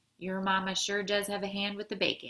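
plain

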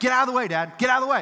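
put-on loud, very high child's yell. Retelling a four-year-old who yells at his dad: imitating a child yelling. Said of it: "my little four-year-old's yelling at me".

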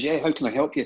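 normal talking voice

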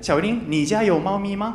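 normal talking voice

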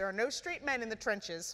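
ordinary delivery

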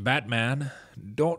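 deep, put-on narrator voice. Giving more lines when asked: Morgan Freeman impression. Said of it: "You do a fucking really good Morgan Freeman".

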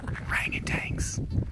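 soft, slow whisper, words breathed out.

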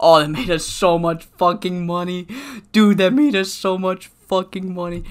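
cracking, hoarse, sore-throated voice breaking. A speaker who feels sick keeps talking, voice cracking from sore throat. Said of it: "My voice is cracking because it hurts".

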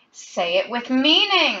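crazed, harsh, unhinged scream. A man kicks another man, screaming with crazed harshness. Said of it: "he screamed the last word with a harshness that sounded crazed".

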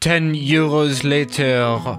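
clumsy, bad, fake put-on French accent. Buying the pro version of a flight simulator app, in a bad French accent. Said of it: "I'm really bad at this French accent".

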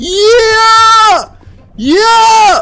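triumphant shouting. Playing a game, the speaker finally succeeds, triumphant shouting. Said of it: "Entschuldigung, dass ich so geschrien habe".

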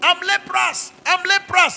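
calling out loudly. A preacher showing how lepers at the gate warned people, shouting. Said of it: "You shout and say".

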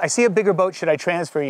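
usual speaking voice

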